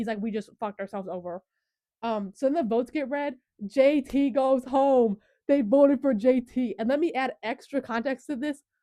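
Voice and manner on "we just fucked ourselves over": mad, furious, angry outburst. Retelling a contestant's reaction after a vote twist: imitating j t getting mad. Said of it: "he gets so mad".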